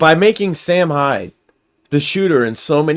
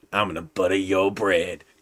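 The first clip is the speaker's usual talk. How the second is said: very low, dropped horror-villain voice; 8 semitones lower, 8 dB quieter than usual. Imagining Freddy Krueger with butter knife fingers: imitating Freddy Krueger. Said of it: "And he'd be like".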